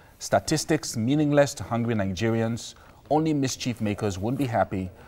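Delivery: ordinary delivery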